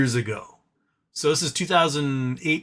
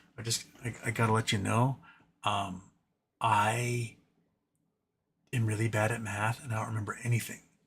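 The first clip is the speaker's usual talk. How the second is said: imitated quiet voice, lower and quieter; 6 semitones lower, 9 dB quieter than usual. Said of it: "They would do it very quietly".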